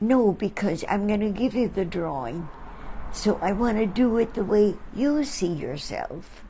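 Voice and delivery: normal talking voice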